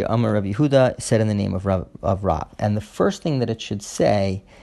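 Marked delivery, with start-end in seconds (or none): none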